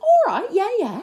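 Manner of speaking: hugely exaggerated, over-the-top, very high Welsh accent. Speaker recaps a TV show scene, quoting a woman's reply; over-the-top Welsh accent. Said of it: "really over-the-top Welsh accent".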